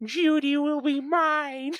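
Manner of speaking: very high, loud, drawn-out voice. Trying out a new voice for a laugh: Carl Wheezer voice. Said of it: "Freaking Carl Weezer".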